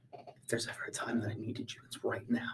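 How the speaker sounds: very quiet, breathy, barely audible whisper. A player's character whispers into a bottle held on his staff: whispering. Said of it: "I'm just going to whisper into it".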